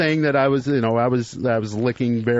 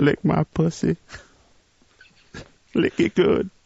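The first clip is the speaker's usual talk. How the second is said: rough-edged, creaky put-on old lady voice; 3 semitones higher than usual. Repeating an exact quote when asked: put-on old lady voice. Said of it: "doing it like in an old lady voice".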